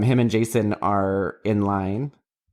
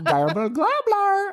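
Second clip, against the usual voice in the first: mocking a failed turkey gobble, higher pitch. Retelling how another speaker tried a turkey noise: imitating a bad turkey noise. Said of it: "You couldn't do a turkey noise".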